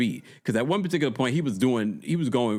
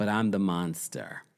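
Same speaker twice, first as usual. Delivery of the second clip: heavily sarcastic delivery; 4 semitones lower, 4 dB quieter than usual. Retelling what Liz said about herself: imitating Liz being sarcastic. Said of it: "You know when someone's being sarcastic?".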